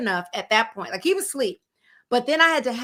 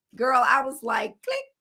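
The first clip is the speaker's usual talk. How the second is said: ordinary delivery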